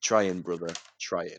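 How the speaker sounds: put-on glum, downcast, depressed-sounding tone. Retelling what a taxi driver says every time: imitating a depressed tone. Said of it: "he says it really depressed".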